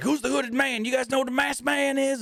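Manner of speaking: mock in-your-face anger, very high pitch. Retelling a wrestler getting in the announcers' faces, mock-angry. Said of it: "he's getting all mad".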